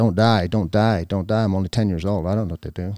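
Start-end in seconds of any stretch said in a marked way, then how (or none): none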